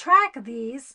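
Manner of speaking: full-volume shout, very loud yell. Speaker telling listeners to track their food symptoms, yelling. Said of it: "Sorry, I'm yelling".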